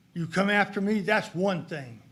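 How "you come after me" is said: ordinary talk, nothing marked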